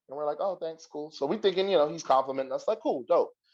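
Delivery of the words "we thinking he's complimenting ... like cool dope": ordinary talk, nothing marked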